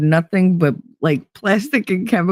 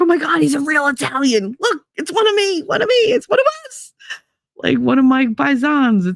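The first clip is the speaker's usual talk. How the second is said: acted over-excited gushing, high and swooping; 8 semitones higher than usual. Recalling spotting a real Italian, retelling own excitement. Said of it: "And I was so excited".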